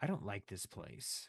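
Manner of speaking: very quiet, barely above a murmur. A game master voices Cecily speaking inside a player's head, very quietly. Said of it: "she just very like quietly says like".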